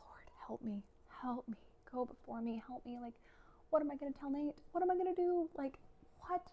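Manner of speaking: high, desperate voice rising in pitch. Retelling praying in the shower that night: retelling own desperate prayer. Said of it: "I'm just praying".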